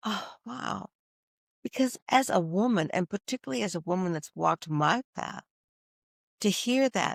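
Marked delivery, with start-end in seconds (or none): 0.0-0.9 big, long, breathy sighed-out whisper, very soft. Retelling a reaction to hearing loving words: retelling a big sigh. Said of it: "that big sigh".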